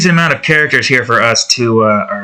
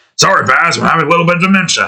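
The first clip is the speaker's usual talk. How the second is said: rough cartoon voice, pitched up; 6 semitones higher than usual. Redoing a quoted line after a failed attempt: almost Fred Flintstone voice. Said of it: "sound like Fred Flintstone almost".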